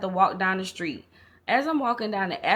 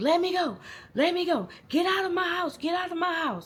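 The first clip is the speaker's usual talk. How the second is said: put-on, very high-pitched, frantic screaming; 10 semitones higher than usual. Retelling a neighbor fighting someone off outside her house: imitating someone screaming. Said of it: "She's screaming to the top of her lungs".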